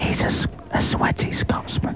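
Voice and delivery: unhurried whisper. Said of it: "what if we whisper".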